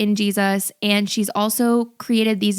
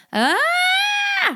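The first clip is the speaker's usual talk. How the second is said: very high, pained ah, stretched and drawn out. Explaining vocal tension, shows how people react to pain: high-pitched 'ah'. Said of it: "that high pitched voice".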